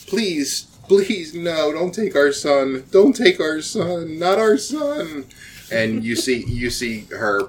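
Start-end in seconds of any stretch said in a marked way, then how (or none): 0.1-5.3 high, begging, imploring, pleading voice. Voicing a mother and father begging a woman not to take their son: parents pleading. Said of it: "a mother and a father pleading with her".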